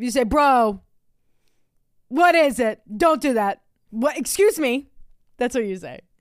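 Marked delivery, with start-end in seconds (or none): 0.2-4.9 mock demanding, stern, authoritative, raised, unhurried voice. Imitating the other speaker scolding the cats: imitating partner's authoritarian voice. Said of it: "it would sound like your authoritarian voice".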